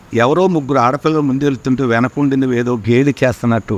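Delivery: normal talking voice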